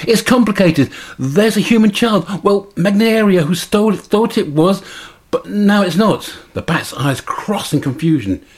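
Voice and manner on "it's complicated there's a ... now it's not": squeaky, excited, high voice. Narrator reading the bat Bongo's reply to Alessia, squeaky excited Bongo voice. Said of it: "Bongo squeaks excitedly".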